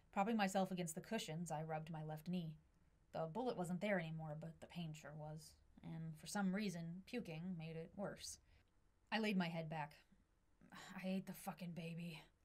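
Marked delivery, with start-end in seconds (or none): 10.8-12.3 hoarse, raspy, rough voice, slow and soft. Narrator, in pain after puking, lays head back and speaks, hoarse. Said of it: "My voice was hoarse".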